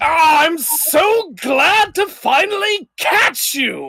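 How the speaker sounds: very high, booming, drawn-out war-god voice. Voicing the god of war greeting the players: booming god of war voice. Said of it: "his voice booming as he says".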